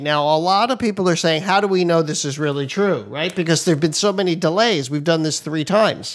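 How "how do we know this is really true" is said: usual speaking voice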